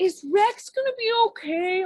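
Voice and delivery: put-on high, drawn-out, whiny little kid voice. Describing a movie kid holding a toy dinosaur, imitating a whiny child. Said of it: "his whiny voice".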